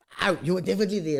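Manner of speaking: ordinary talk, nothing marked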